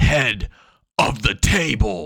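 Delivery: dead-serious, grave, very slow dramatic delivery. Imitating how others deliver a catchphrase, mock-serious dramatic tone. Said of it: "They get very serious, change the tone of their voice".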